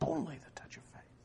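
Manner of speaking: soft, hushed whisper, not breathy.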